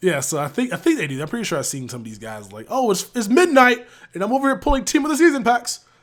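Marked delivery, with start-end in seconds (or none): 2.7-5.8 very high, very loud, booming put-on British accent. Imitating players who pull packs at midnight, in a british accent. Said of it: "you did a British accent".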